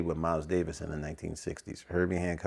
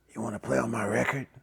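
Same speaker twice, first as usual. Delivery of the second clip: put-on raspy voice, higher; 5 semitones higher than usual. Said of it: "he spoke with a rasp".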